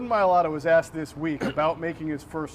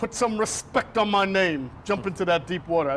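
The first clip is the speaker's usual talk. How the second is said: bad, terrible put-on Australian accent; 3 semitones higher than usual. Right after praising an aussie accent, trying one out, terrible australian accent. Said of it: "That was a terrible Australian accent".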